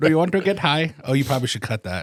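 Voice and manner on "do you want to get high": put-on Indian accent. Joking about the students in a study from Pakistan, in a mock Indian accent. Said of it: "That's the wrong accent".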